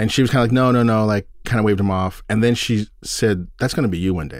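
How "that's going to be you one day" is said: put-on mock-teasing tone, faster. Retelling her remark after she waved off a man washing the window, teasing jokingly. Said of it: "Like kind of joking, sort of teasing me".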